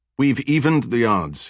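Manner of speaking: ordinary delivery, nothing marked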